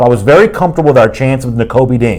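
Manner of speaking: usual speaking voice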